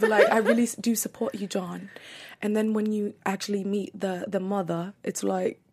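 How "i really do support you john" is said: fake, put-on English accent. Retelling what she said in support of John, in a put-on English accent. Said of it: "You're English actor".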